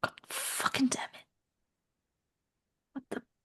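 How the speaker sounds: swearing at oneself. A player whose character dangles upside down in a trap, cursing at oneself. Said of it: "I'll be cursing".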